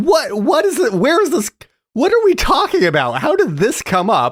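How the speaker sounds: mock, utterly baffled, very high, swooping voice. Retelling own reaction while watching the scene: imitating own confused reaction. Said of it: "And I was like".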